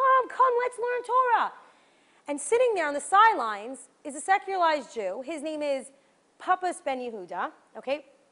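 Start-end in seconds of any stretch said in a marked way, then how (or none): 0.0-1.5 very high, drawn-out yell. Telling a story about people gathering to learn Torah: retelling a yell. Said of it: "and he's yelling".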